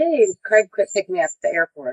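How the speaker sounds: plain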